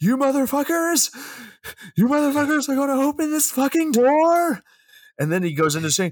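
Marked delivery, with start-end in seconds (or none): 0.0-4.6 shrill, very high screaming. Retelling a film scene where Cage bangs on the basement wall, imitating Cage screaming. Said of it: "he's screaming".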